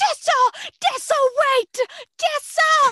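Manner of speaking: very high, loud screaming. Retelling a movie scene where Hardin runs after the ambulance: imitating someone screaming. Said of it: "and he's screaming".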